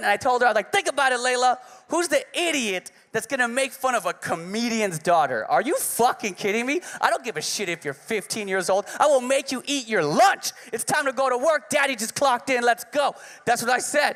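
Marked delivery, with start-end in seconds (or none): 0.7-13.1 mock fired-up, amped-up, pumped ranting voice. Retelling what he told his daughter about her bully: imitating himself amped up. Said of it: "So I'm all amped up".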